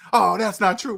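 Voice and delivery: worked-up, emotional, upset voice. Mocking a viewer who gets emotional: imitating an emotional commenter. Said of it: "Get all kind of emotional".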